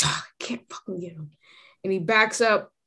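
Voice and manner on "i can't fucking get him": fed-up, disgruntled, frustrated tone. Voicing a character who failed to grab someone: disgruntled and frustrated. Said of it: "disgruntled and frustrated".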